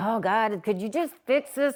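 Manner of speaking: mock-weary, tired and frustrated tone. Describing how they sometimes pray when busy, retelling a tired, frustrated plea. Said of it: "I'm busy and I'm human and I'm tired".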